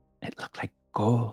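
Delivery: hushed whisper. A character telling the others what she saw, whisper. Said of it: "She whispers".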